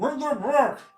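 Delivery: very high, very loud shout, muffled through cloth. Mimicking Jeremy shouting into a cloth bag over his head, in muffled voice. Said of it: "You say a muffled".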